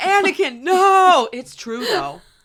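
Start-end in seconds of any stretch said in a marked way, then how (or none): 0.0-1.3 very high, very loud scream. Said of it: "it's just Obi-Wan screaming".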